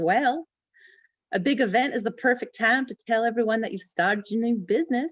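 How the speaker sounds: put-on, drawled Southern accent, pitched high. Retelling what an upline said to her, imitating Southern drawl. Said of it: "Southern drawl, which I'll try to do".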